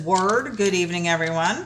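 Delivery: ordinary talk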